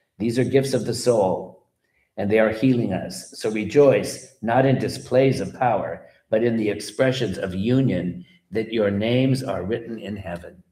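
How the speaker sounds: ordinary talk, nothing marked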